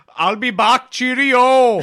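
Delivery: put-on loud, high voice in an English accent. Asked for an English accent, mixing it with Arnold, Arnold English accent. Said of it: "But an Arnold English accent".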